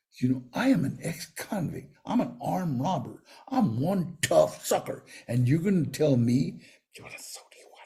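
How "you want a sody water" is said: hushed, very quiet, breathy whisper. Retelling a bartender's question: imitating someone speaking very quietly. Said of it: "he's gonna say it very quietly".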